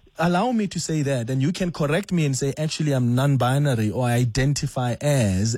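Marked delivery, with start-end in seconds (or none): none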